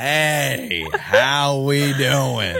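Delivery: mock slowed-down speech. Describing barbecue restaurant staff, the speaker imitates them talking slower. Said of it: "you're talking slower".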